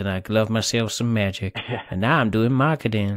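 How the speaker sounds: put-on Southern US accent. Suggesting how the other speaker should have opened their story: southern accent. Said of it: "use a southern accent".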